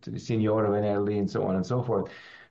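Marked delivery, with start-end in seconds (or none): 0.2-1.2 put-on strong Italian accent. Retelling what a caller said on an early sunday morning call; heavy italian accent. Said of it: "this man with a heavy Italian accent said".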